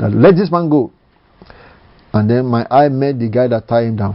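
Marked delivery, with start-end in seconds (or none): 0.1-0.9 play-acted furious, commanding, high-pitched angry voice. Retelling a vision of commanding a captor: retelling an angry command. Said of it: "to command in an angry vo-, angry voice".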